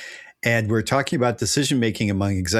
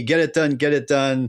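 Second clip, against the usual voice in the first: mild, half-hearted, repeated demanding yell; 5 semitones higher than usual. Retelling what a yelling chief executive says to a project manager: imitating someone yelling. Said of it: "this big C E O person is yelling at me".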